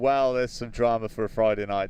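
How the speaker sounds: normal talking voice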